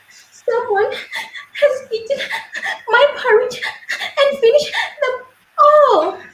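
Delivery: very high, tiny, sobbing little voice. Reading the three bears story, Baby Bear finds his porridge eaten: Baby Bear, sobbing tiny voice. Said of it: "said Baby Bear in a sobbing, tiny voice".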